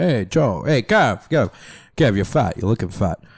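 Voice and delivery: brutally frank, blunt dad voice. Doing an impression of Joe greeting someone: impression of Joe. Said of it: "My impression of Joe would be like".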